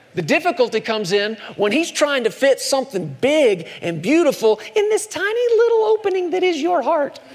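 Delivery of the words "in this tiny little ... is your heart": puppet voice, very high-pitched. Mid-explanation, switching into a put-on puppet voice. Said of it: "why I said that with a puppet voice".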